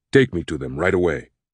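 ordinary talk

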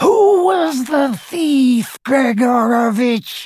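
icy, cold, very high-pitched voice. Narrator reading a voice interrogating gregorovitch, high, cold voice. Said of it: "said the high, cold voice".

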